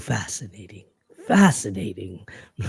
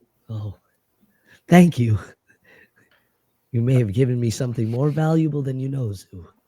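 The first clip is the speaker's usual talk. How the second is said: teary, moved, tearful voice; 3 semitones higher, 4 dB louder than usual. A character thanks another for what they shared, tearful. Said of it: "I'm like tearing up".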